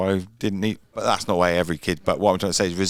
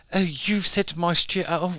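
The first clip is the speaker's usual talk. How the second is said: high, posh, outraged voice. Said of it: "why are they posh?".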